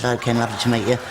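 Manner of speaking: ordinary delivery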